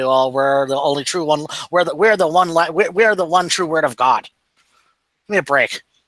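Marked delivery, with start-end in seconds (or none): none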